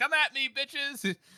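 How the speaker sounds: acted, very high, slow, drawn-out heroic taunting voice. Retelling Casca standing on the walls: imitating Casca's heroic taunt. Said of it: "He's all, like, heroic and shit".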